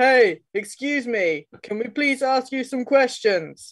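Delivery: shouting in character voice. Voicing a character calling questions to distant workers: in-character bellow. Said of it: "like, bellows".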